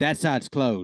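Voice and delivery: put-on American southern accent throughout. Retelling a worker telling customers a side was closed, southern accent impression. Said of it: "she sounded southern".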